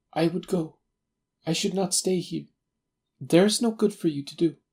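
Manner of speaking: frightened, straining for calm, pitched high. Narrator voices a woman sick with fear, speaking to the visitor; frightened, straining for calm. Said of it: "I could see at a glance that she was sick with fear, / the yellow light from my lamp beating upon her eager and beautiful face. I could see at a glance that she was sick with fear, and the sight sent".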